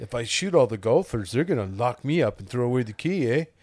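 put-on Canadian accent. Quoting a movie line about shooting golfers: Carl from Caddyshack, Canadian voice. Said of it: "you just did the, the Canadian voice".

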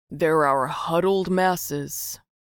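loud, heavily sarcastic, dripping with sarcasm. The first man, one of Jerry's detractors at the bar, dripping with sarcasm. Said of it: "His voice dripped with sarcasm".

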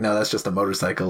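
plain

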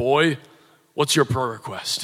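put-on deep, booming German accent. Retelling Reinhard Bonnke asking a 10-year-old boy his prayer request, deep, booming Reinhard Bonnke voice. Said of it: "he has this deep, booming German voice".

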